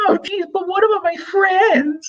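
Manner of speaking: put-on girly falsetto, very high. Retelling how a girl answered Mark's invitation, imitating a girl's voice. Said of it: "Do you like this girl voice that I'm doing".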